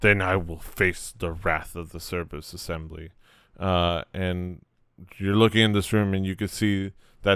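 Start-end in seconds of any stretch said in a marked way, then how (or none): 0.0-3.1 put-on orc voice, low-pitched. Voicing an orc who answers an old man's threat: orc voice. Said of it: "And the orc says".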